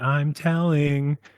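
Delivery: very childlike put-on little-kid voice. Retelling what a shadowy figure said to the speaker, in a childlike voice. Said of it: "like in a very like almost like childlike voice".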